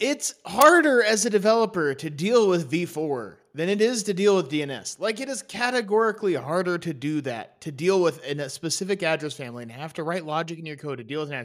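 worked-up rant. The speaker catches themselves mid-complaint to listeners: ranting. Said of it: "I'm ranting".

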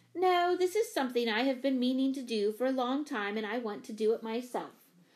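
ordinary delivery, nothing marked

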